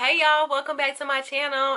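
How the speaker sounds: loud, high, hyped, belted vlogger-style voice.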